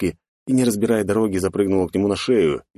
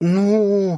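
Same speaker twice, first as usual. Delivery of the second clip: very high, hesitant, nervous drawl on drawn-out ну; 13 semitones higher than usual. A girl, questioned by her father, stalls for an answer in a nervous drawl. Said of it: "нервно протянула она".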